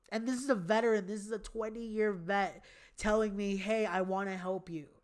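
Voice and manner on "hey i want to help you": ordinary talk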